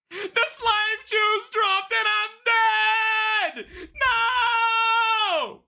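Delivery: high, blaring, shrill scream, "no" drawn long. Speaker's character dies in the game, screaming. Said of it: "I'm sorry for screaming".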